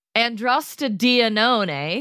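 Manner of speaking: androstenedione pronounced as if an Italian word. Speaker pronounces a pheromone name found in armpit sweat: Italian-sounding pronunciation. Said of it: "I said it like it was an Italian word".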